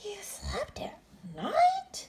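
hushed, breathy, whispered gasp. Bats hear a young bat's strange story: gasped. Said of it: "gasped another".

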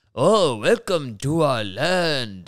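loud, very slow put-on Japanese accent. Retelling a stage role he played as a child: offensive put-on Japanese accent. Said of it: "a very offensive Japanese guy".

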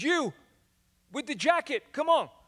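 put-on high-pitched American accent. Telling of a guy at the basketball court calling him over, in an american accent. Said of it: "That's my American accent".

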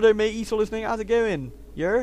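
put-on Wiltshire regional accent. Commentating a game, the speaker slips into a put-on Wiltshire accent. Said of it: "He's like a Wiltshire accent".

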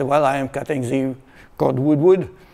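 put-on English with French accent. Retelling answering a lost skier, the speaker replies in his french accent. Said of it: "in my French accent".

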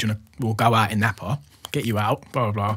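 ordinary talk

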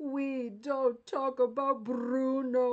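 loud, very slow, put-on South American accent. Showing how he says a line from a Disney movie, put-on South American accent. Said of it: "And I say it like that".

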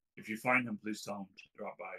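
very quiet, soft, hushed. Voicing a woman's message to the listener, very quiet. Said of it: "she says very quietly".

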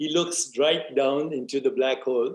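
plain reading voice

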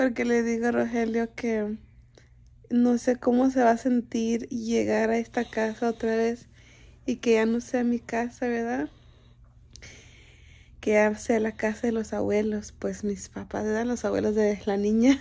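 close to crying, voice on the verge of breaking. Speaking to the comadres, on the verge of tears. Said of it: "Voy a llorar".

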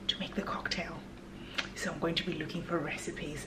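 soft, mischievous whisper.

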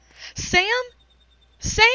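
very high-pitched calling out. Daryl runs through the rubble searching for sam, crying out. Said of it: "He cried out".

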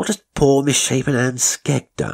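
scornful, dismissive scoff. He answers the narrator's alarmed mention of Anne Skegg; scoffing. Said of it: "he scoffed".

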